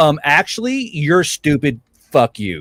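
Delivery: ordinary delivery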